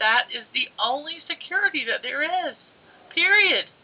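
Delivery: choked up with emotion. Speaker in a conversation, getting choked up thinking about it. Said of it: "I'm just getting choked up thinking about it".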